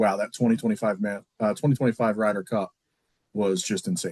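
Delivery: ordinary delivery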